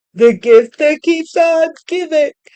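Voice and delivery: talking through a yawn. Giving a tarot reading to viewers, yawning while speaking. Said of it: "I'm sorry, I'm yawning".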